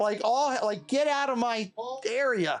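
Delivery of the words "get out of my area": chirpy, chattering squirrel voice with a scolding tone. Retelling a squirrel scolding you in the woods: imitating a chirping squirrel. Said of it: "chirping at me".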